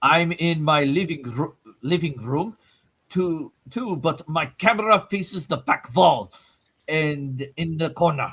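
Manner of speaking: slow, deliberate put-on German accent. Reading a chat message aloud on request, in a put-on german accent. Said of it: "read it in a German accent".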